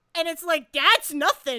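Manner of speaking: ordinary talk, nothing marked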